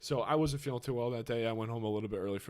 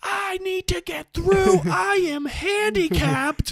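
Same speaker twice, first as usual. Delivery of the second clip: put-on woman screaming, higher and louder; 14 dB louder than usual. Retelling how a woman pushed through a train crowd: imitating a woman screaming. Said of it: "She's just screaming".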